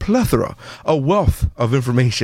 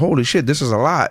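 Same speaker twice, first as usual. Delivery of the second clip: ordinary talk, nothing marked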